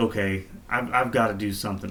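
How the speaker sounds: ordinary delivery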